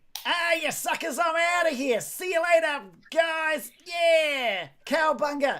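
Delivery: very high, loud, gloating, taunting call. Voicing the character who is down in the cave, calling out from a cave. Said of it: "you can just sort of hear uh, calling out from down there".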